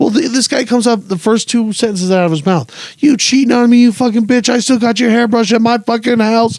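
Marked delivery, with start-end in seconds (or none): 3.0-6.6 put-on screaming, higher pitched. Retelling a stranger's first words on walking up, acting out his screaming. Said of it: "he's screaming at this guy".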